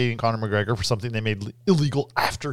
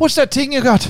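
very loud, very high put-on Irish accent, th as t; 13 semitones higher, 9 dB louder than usual. Showing how to imitate an Irish accent, saying T for TH: imitating an Irish accent. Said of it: "to imitate an Irish accent".

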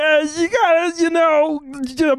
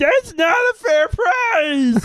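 rampaging monster voice, higher pitch; 3 semitones higher than usual. Answering a question about Kermit as the Hulk, Kermit the Frog as the Hulk. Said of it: "he'll be breaking things and be like".

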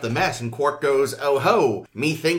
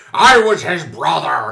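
slow, loud and angry delivery; 8 dB louder than usual. Retelling an episode, quoting a Klingon: imitating an angry Klingon. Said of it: "a big angry Klingon is all like".

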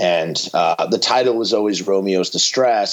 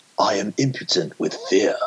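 put-on British accent, movie-star style; 4 dB quieter than usual. Quiz your listeners on which movie a line is from, as Keanu doing a British accent. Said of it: "Keanu's right. British accent".

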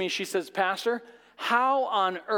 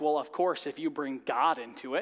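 put-on smug, quick, low know-it-all teenage retort; 6 semitones lower, 3 dB quieter than usual. Retelling a teenage girl's reply to an answer, in a mock-smug tone. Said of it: "in the smug tone and look".

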